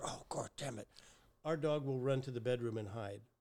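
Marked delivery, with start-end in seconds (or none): 0.0-0.9 soft, hushed whisper. Showing how even her whispered swearing sends the dog hiding. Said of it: "And if I whisper".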